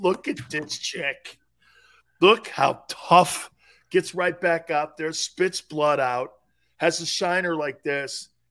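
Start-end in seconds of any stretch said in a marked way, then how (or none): 0.0-3.5 weepy speech through tears. Retelling watching her from the sideline, retelling talking while crying. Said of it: "I'm just sitting there crying".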